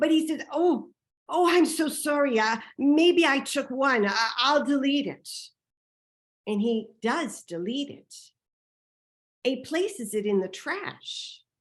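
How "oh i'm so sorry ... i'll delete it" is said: put-on trembling old man voice, higher pitch. Retelling what an elderly man said after being caught with his camera, mimicking a trembling old man. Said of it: "The man starts to shake".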